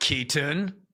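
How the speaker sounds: serious, intense, stern tone. Showing how a parent calls a son's name: imitating an intense you're-in-trouble call. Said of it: "my eyebrows were down and I was intense".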